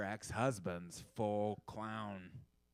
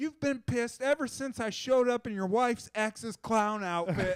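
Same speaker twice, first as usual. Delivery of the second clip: frantic, very high-pitched, loud freaking-out voice; 13 semitones higher, 8 dB louder than usual. Retelling running back and getting in a guy's face: acting out freaking out. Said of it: "and I'm freaking out".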